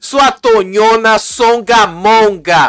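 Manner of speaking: acted, repeated loud shouts in a row. Retelling the fight, quoting another contestant: imitating someone yelling an insult. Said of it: "a Martina gritou".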